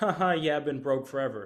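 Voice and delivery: loud, laughing, chuckling through the words. Retelling how someone on a call jokes about being broke: imitating someone laughing while talking. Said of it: "Why are you laughing about that?".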